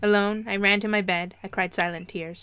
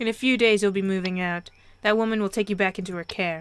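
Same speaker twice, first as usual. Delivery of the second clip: ordinary delivery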